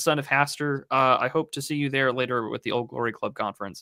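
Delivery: ordinary delivery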